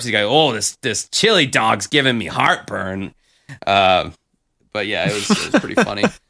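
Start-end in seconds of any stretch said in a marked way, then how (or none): 0.2-3.1 dopey, dumb-sounding Midwestern voice. Retelling a cartoon museum narrator part: Dennis Farina as dumb Midwesterner. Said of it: "stereotypical, like, dumb Midwesterner".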